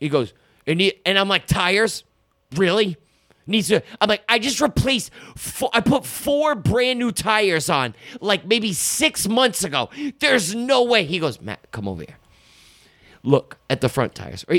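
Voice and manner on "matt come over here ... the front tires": very low, totally unbothered, super calm voice. Retelling what a man said about the front tires, imitating him super calm. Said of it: "like super calm".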